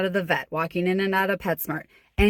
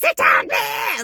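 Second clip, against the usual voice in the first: unhinged, out-of-control yelling, very high-pitched; 4 dB louder than usual. Showing a leader what not to do, out-of-control yelling. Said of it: "I'm not yelling. I'm not like".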